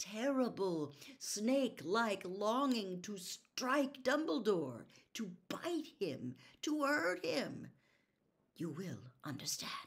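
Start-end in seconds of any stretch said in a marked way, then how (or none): 8.6-9.7 gentle, soft, hushed whisper. Dumbledore speaks to Harry while holding him, whispered. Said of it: "whispered Dumbledore".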